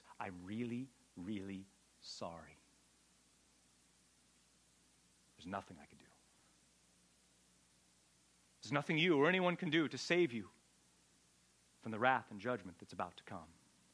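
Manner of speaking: play-acted low, trembling, quivering delivery. Voicing what he had to say to his blood relatives, acting out a quivering voice. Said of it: "say with trembling hands and a quivering voice".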